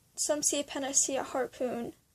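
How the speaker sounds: ordinary delivery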